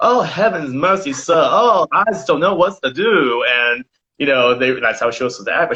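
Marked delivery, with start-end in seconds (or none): 0.0-3.4 country bumpkin maid voice. Retelling a show scene where a director tells the maid how to act: imitating a stereotyped country bumpkin maid. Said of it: "You're paid to sound like this and to act like a country, you know, bumpkin".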